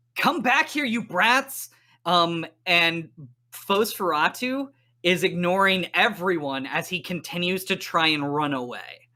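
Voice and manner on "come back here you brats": angry, high-pitched yelling. Voicing Van Helsing, pinned to the wall, yelling after fleeing players: shouting. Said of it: "and she shouts".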